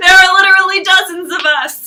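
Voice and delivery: very loud, high-pitched yell. Retelling a sitcom scene where Tobias yells: imitating Tobias yelling. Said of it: "he just starts yelling".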